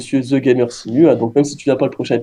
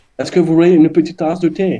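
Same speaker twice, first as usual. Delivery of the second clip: French with a put-on English accent, pitched up; 5 semitones higher than usual. Doing a forfeit on the show, the speaker attempts an English accent in French. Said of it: "je sais même pas comment on fait l'accent anglais".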